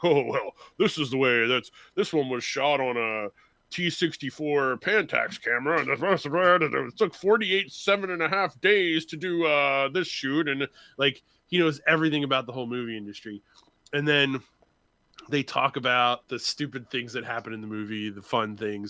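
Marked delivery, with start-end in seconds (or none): 0.0-10.5 put-on deep male voice. Retelling what a friend with movie knowledge says: imitating a guy with a deep voice. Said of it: "the guy with the real deep voice is like".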